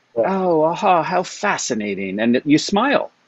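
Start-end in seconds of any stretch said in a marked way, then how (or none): 0.3-2.2 slow, drawn-out, put-on British accent. Quoting a man in his 80s reacting to a mistake: imitating a British accent. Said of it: "has this wonderful British accent".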